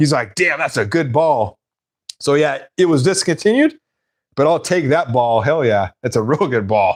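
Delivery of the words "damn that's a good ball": irritated, pissed-off, annoyed, with grudging admiration. Retelling what another person said about the ball: imitating someone pissed off. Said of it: "He was all pissed off".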